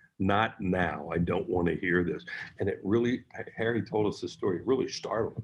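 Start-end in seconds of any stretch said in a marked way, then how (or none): 0.2-2.3 stern, no-nonsense ballplayer impression. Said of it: "pretty good Dave Hollins impersonation".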